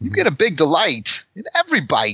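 swooping pitch, kept high, in a celebrity voice. Reading an ad line in a Christopher Walken voice. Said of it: "It's Christopher Walken, obviously".

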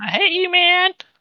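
very high, shrill, grating, annoying shout. Recapping a game fight, one of three attackers shouts, retelling a high-pitched annoying shout. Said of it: "shouting in a very high-pitched, almost annoying voice".

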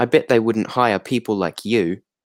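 uncertain, put-on British lady accent. Retelling what a british lady said to another woman: attempted british lady accent. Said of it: "I don't even know what that accent is".

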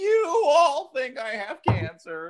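slow, high, drawn-out horror-villain voice. Imitating a comedian as a horror villain: Jigsaw voice. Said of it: "like the actual Jigsaw".

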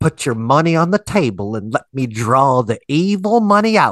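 TV preacher voice with faith-healer preaching delivery. Showing another speaker an imitation of Ernest Angley. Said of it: "let me do my best imitation of Ernest Angley".

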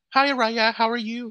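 high nasal voice. Doing an impression of Nalea when asked to: Nalea impression, kinda nasally. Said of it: "can you do her?".

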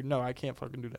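play-acted snippy, nasty, rude, catty tone. Retelling what a security guard said when asked a favour: imitating a bitchy reply. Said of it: "in a bitchy way".

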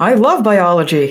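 loud, showy, pointed declaration. Retelling passing someone's professor while walking the dog, saying it very loudly. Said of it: "and I go very loudly".

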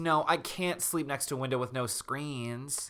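ordinary talk

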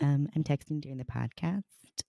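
high, soft, offhand mocking voice.

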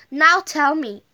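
ordinary delivery

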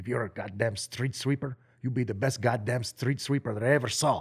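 put-on Greek accent. Quoting his father's advice about work, Greek accent. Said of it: "I'll do it in his Greek accent".

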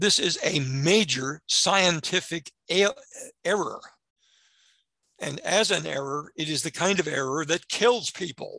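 impassioned, heartfelt, emphatic, passionate insistence. Criticizing the revised guidelines as a deadly error: passionate voice. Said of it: "you can hear the passion in my voice".

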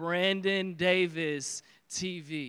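very slow, low, drawn out word by word. Speaker gives his audience his Twitter handle, saying it slowly. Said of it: "I'm going to say it slow".

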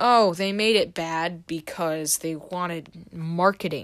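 ordinary talk

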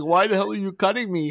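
high, tearful, wounded weeping voice. Retelling what a woman said while crying: imitating someone crying. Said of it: "she's crying like".

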